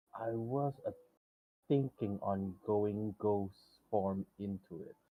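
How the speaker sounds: soft, hushed stage whisper. Playing a character who leans over to whisper a plan to a companion, stage whisper. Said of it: "I'm I'm whispering".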